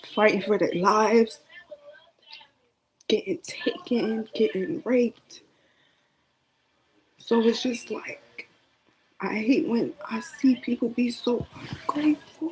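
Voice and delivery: crying while talking. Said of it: "I ain't mean to cry, y'all".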